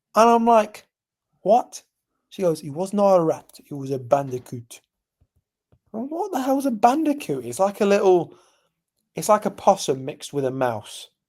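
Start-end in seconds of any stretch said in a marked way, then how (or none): 2.6-4.8 bad fake French accent. Retelling what a woman said when she came back, in a bad French accent. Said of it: "bad French accent".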